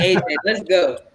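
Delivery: rote delivery in the same tone. Retelling how a castmate kept saying a line: imitating a castmate's same-tone line. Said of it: "Said that, like, eighteen times in the same tone".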